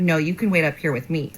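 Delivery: normal talking voice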